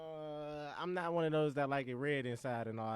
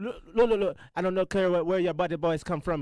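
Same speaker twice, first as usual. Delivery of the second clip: fake Jamaican accent, very loud; 4 semitones higher, 11 dB louder than usual. Retelling talking to a phone store worker: put-on jamaican accent. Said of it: "'cause in the Jamaican accent".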